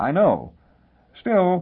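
voice dying away, trailing off. Discussing a crime that must have had accomplices, he answers, voice trailing off. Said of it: "His voice trailed off".

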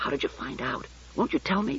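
breath-only whisper, barely voiced, very soft. [name], asking Jessie in the darkness, whispering. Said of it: "[name]'s voice returned to its whisper".

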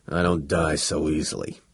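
grunting. A prisoner answers a companion who thought him gone for good, grunting. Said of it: "grunted the Arcturian".

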